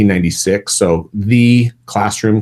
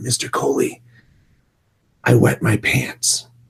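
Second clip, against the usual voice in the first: quiet, slow whispering; 3 semitones higher, 5 dB quieter than usual. Retelling what a student said privately to the teacher: imitating a whisper. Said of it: "she whispered".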